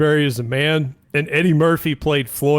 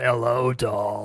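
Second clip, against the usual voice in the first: put-on, very heavy smoker's voice; 4 semitones lower, 6 dB quieter than usual. Imitating a woman everyone remembers: heavy smoker's voice. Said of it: "the super smoker voice".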